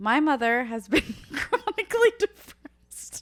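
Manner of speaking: speaking through laughter, loud, slow. Reading a post aloud to a co-host, laughing while reading. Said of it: "try to get through this without laughing".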